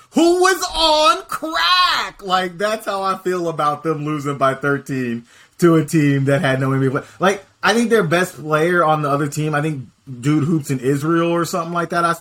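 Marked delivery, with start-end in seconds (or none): 0.1-2.2 very high-pitched, very slow and drawn out. Mocking a team's loss with a Stephen A. Smith impression. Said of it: "like Stephen A did the".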